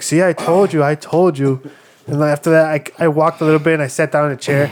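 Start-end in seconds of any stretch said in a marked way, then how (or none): none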